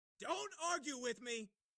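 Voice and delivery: full-on, high-pitched, shrill yell. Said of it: "Can we not yell this early".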